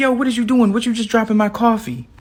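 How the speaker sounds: put-on very high, mad, confrontational angry outburst. Retelling how a man at a bus stop reacted: imitating an angry man. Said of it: "this man instantly gets super mad".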